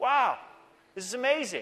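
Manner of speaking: loud, sing-song, heavily sarcastic feigned amazement. Joking that there is no corruption in government: sarcastic. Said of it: "I'm being sarcastic".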